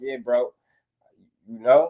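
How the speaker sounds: plain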